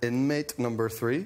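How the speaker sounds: ordinary talk, nothing marked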